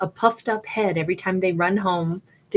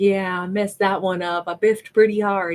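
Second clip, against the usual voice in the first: acted sulky, bummed-out little kid voice. Describing how people act, imitating a bummed little kid. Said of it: "feels like like a little kid who's like".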